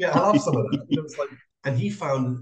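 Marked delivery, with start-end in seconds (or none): 0.0-0.8 put-on pretty strong northern Yorkshire accent. Retelling what an edible flower grower said, imitating Ben Wild's Yorkshire accent. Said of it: "Good impression".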